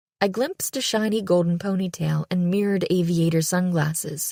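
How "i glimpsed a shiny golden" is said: plain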